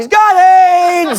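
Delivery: sudden high blurt, "aids" drawn out. Retelling an interview moment, imitating Donald Sterling blurting out. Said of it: "Donald Sterling just blurts out".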